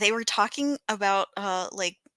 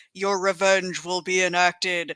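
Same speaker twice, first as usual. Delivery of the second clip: put-on loud, scary voice, much lower; 2 semitones lower than usual. Recalling a line from a show, the speaker imitates a loud scary voice. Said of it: "and it was so loud and scary".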